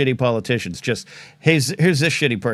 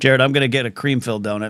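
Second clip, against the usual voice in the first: ordinary talk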